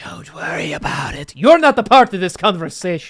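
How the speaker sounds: loud, creepy, ominous scary voice. Voicing a thought inside another character's head, telling an onlooker to stay out: scary voice. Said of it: "I like scary voice".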